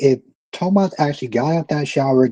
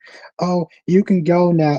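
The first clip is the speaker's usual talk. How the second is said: acted wounded, hurt, slow small voice; 3 semitones higher than usual. Retelling a reply after she gets hurt: imitating a hurt tone. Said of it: "she gets all hurt".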